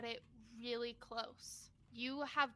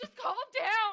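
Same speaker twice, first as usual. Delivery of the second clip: frantic, panicked yell, very loud and high; 9 semitones higher, 10 dB louder than usual. A panicking character grabs someone's shoulders, panicked yelling. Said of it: "yelling at you in panic".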